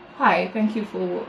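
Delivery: put-on flat, emotionless voice. Describing how a woman thanked another person without any feeling, imitating a flat monotone. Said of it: "her voice was so monotone".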